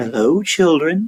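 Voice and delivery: sweetly spoken, sweet-toned voice. Reading a story aloud, someone in the hall greets the children in a sweet voice. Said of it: "someone said in a sweet voice".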